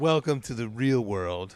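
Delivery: condescending, patronizing, talking down. Responding to a friend complaining about his car, condescending.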